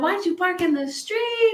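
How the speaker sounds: very high, panicked, freaked-out yell. Retelling how mom reacted to the news about the car: imitating mom yelling. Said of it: "she's yelling at him".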